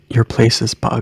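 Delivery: whispering. Speaking in character to another character who came outside: whisper. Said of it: "I'm gonna whisper to him".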